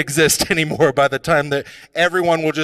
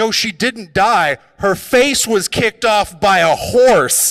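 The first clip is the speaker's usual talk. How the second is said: loud, high-pitched, oblivious tone; 5 semitones higher, 3 dB louder than usual. Speaker retelling what the grandparents kept saying, in loud grandparents' voices. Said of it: "Like this is the volume".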